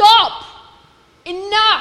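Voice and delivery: forceful authoritative shout. Showing how the Hebrew line sounds: forceful authoritative command. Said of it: "It's a forceful".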